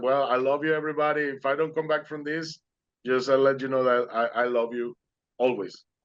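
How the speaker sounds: plain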